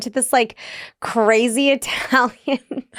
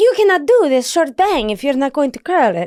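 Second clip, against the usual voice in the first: put-on Italian man's accent in English; 3 semitones higher than usual. Retelling what a hairdresser said: imitating an Italian man's accent. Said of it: "I can do this accent because I am half Italian".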